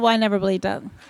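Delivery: low, bone-dry, dead-straight, put-on deadpan. Retelling a parent's reply about believing in success: imitating mom's deadpan reply.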